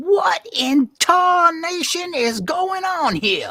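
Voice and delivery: high, loud, slow, furious yell. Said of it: "To whom are you yelling?".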